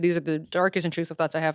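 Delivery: normal talking voice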